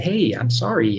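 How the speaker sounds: plain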